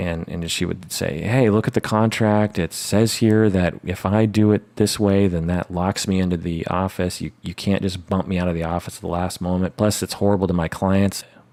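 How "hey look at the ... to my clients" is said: ordinary talk, nothing marked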